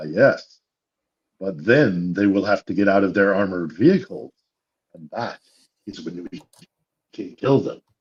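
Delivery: very conspiratorial, secretive, confiding tone. Retelling how a waitress leaned over and answered, in a very conspiratorial voice. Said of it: "in a very conspiratorial voice said".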